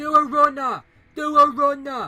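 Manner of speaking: mock shouting voice. Retelling how a third intruder came back: imitating someone shouting. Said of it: "started shouting".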